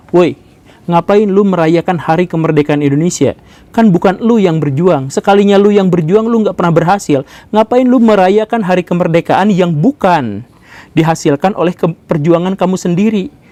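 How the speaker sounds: ordinary delivery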